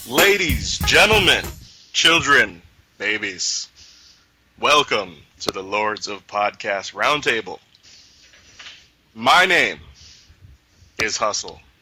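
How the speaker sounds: very slow, deliberately drawn-out words. Podcast host welcomes listeners to the show, very slow delivery. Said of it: "Why am I talking so slowly?".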